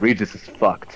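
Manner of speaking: hushed whisper under the breath. Playing a character left alone who mutters about Regis: whispering to himself. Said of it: "I kinda whisper to myself".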